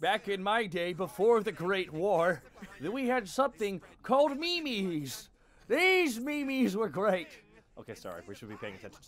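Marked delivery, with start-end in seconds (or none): 0.0-7.3 put-on elderly grandfather voice, high, slow and drawn out. Teasing the other speaker about his age by speaking as a grandpa: old grandpa voice.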